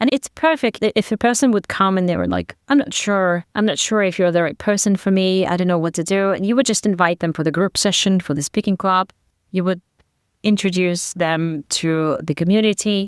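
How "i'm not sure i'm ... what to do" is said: plain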